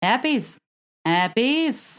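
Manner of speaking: hairpiece said with Australian accent vowels. Showing how hairpiece sounds in an Australian accent: Australian accent. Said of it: "considering that word in an Australian accent".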